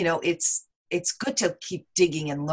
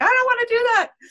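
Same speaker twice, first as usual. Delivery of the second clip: high-pitched, loud, mocking voice. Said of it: "a lot of people are like".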